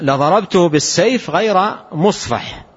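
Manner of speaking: ordinary talk, nothing marked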